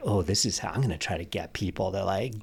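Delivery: creepy voice with swooping pitch.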